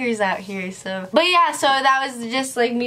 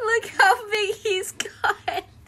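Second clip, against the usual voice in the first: very high, teary, tearful laughing cry; 11 semitones higher than usual. Looking at baby pictures of the dog: crying while laughing. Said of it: "I'm crying".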